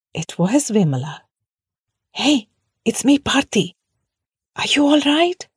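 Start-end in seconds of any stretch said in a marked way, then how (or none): 2.1-5.3 careful, cautious, raised pitch. Reaching the mound, the narrator checks on her: spoken softly. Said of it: "I spoke softly".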